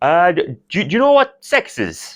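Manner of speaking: put-on Kerry accent. Acting out your dad asking you an awkward question, imitating dad's heavy Kerry accent. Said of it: "heavy Kerry accent".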